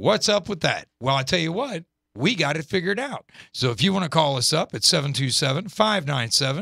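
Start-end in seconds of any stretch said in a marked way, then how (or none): none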